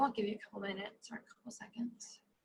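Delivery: soft, quiet whispered aside.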